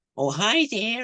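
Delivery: terrible put-on American accent, very high pitched. Showing the beaver puppet voice made for Labyrinth, in a terrible American accent. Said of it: "I did it with this terrible American accent".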